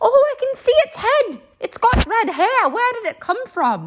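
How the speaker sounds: put-on high, Irish-accented nurse voice. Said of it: "The Irish one was like".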